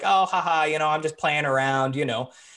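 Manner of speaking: put-on joking tone. Retelling a man's rude remark made in front of everyone, imitating a jokey tone. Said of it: "under like this jokey kind of tone".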